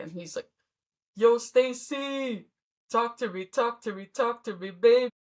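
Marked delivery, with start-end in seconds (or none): 1.2-5.1 slow, easygoing, laid-back cool-guy drawl. Discussing a movie, doing an impression of how a character sounded. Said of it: "this is what he sounded like".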